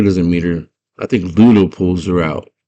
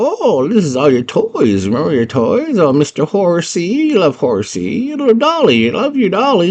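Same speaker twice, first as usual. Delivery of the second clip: put-on very high, sing-song, swooping old goblin woman voice; 11 semitones higher than usual. Retelling a scene where a goblin shows the girl her toys; old lady goblin voice. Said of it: "this old lady goblin".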